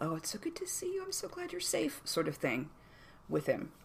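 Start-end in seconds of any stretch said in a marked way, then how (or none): 0.0-2.0 tender, gentle, soft, very high comforting tone. The narrator voices Rundar taking the Gith's hand in greeting, gentle voice. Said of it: "starts like doing the gentle".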